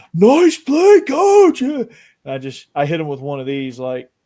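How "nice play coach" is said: shrill, very loud, high top-of-the-lungs shout. Retelling someone on the top bleacher calling to the coach: imitating someone shouting. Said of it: "shouting at the top of his lungs".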